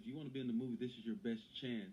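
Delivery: normal talking voice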